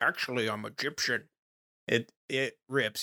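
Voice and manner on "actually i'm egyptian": put-on Scottish accent, film actor impression. Discussing how the actor keeps his own accent while claiming to be Egyptian, imitate Sean Connery's Scottish accent. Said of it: "doing his Scottish accent".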